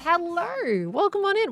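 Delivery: voice gone to a croak. A streamer welcomes an incoming raid of viewers, croaky voice. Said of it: "Why did my voice go croaky".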